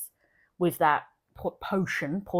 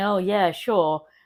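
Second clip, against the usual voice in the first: sarcastic, dismissive brush-off tone. Retelling a character's overheard reply, imitating a sarcastic reply. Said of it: "her being sarcastic".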